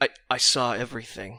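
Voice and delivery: whispering very quietly. Voicing an unrecognized man answering a question, in a very quiet whisper. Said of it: "he whispers very quietly".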